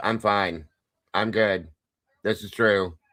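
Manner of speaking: level, unvaried, flat, dead droning monotone. Mimicking a man who insists he is well, in an imitated monotone. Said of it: "You hear the monotone in his voice?".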